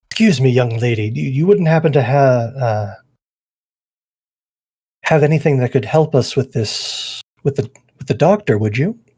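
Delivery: gentle, kindly, hesitant voice with fumbling restarts. Kneeling behind the dwarf, a player's character asks a young lady for help, softly asking. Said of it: "softly uh, ask her".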